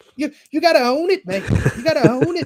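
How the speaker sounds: very high, squeaky Irish leprechaun brogue. Asked to do it again, repeating Ian Gary's words in a Lucky Charms impression. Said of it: "my best uh Lucky Charms impression".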